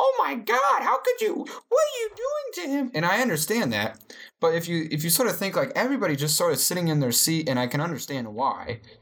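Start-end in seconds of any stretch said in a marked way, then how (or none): 0.0-2.9 play-acted, very high-pitched shrieking scream, woman's voice. Describing bystanders in a video, imitating the lady screaming at the scene. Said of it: "screaming like".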